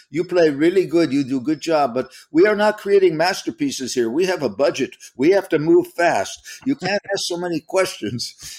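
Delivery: put-on Argentinian accent. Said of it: "in his warm, lovely Argentinian accent".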